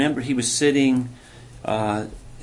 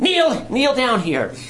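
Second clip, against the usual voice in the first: put-on squeaky voice, much higher, louder; 11 semitones higher, 3 dB louder than usual. Retelling a man calling the speaker over, imitating his squeaky voice. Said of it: "he just said in his squeaky voice".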